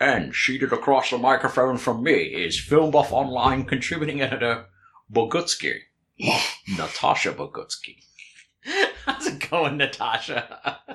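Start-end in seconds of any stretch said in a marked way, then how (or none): 0.0-8.0 very bad put-on Scottish accent. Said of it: "it's the world's worst Sean Connery impersonation".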